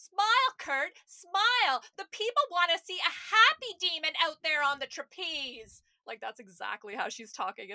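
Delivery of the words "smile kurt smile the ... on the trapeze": very loud, shrill, swooping, cartoon-style yell. Speaker imagining how a character sounds in a flashback scene, Amanda in bad cartoon voice. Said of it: "it's just like a bad 90s cartoon voice because she's like yelling".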